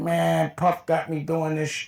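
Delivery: put-on irritated, fed-up, annoyed, griping tone. Retelling a friend's reply to teasing: imitating someone annoyed. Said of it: "he was tight".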